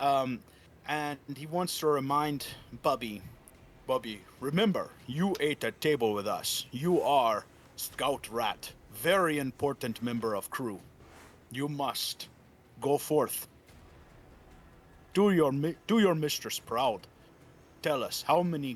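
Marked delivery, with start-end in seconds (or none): 3.9-17.1 deep, booming, chittering put-on voice. The speaker voices a character addressing Bubby, in a deep booming chittering voice. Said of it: "he's got this deep booming voice, but he has to chitter".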